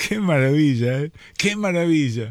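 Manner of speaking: tearful and moved. Speaking to a compadre, crying, moved. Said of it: "estoy llorando como un boludo".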